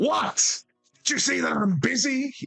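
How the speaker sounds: very high-pitched, enraged, furious shout. Voicing an angry dwarf interrupted at work: angry dwarf shout. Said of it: "with a shout that almost seems to push the air".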